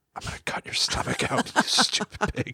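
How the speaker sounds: hushed, soft whisper. Playing Grýla who threatens hungry children: whispering as Grýla. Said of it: "and I will look down and whisper".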